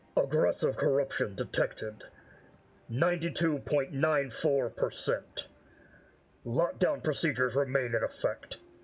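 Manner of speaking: deep, low, grinding, rumbling mechanical voice. Voicing a machine announcing a corruption scan: deep rumbling mechanical voice. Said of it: "in a deep rumbling, like, mechanical voice".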